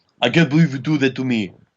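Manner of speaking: shoddy, bad put-on Russian accent. Retelling what a Russian man on a train said to his girlfriend, bad Russian accent. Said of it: "this shitty Russian dialect".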